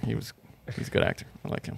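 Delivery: soft, hushed whisper under the breath. Admitting liking an actor while afraid of being yelled at: whispering. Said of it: "Why'd you whisper that?".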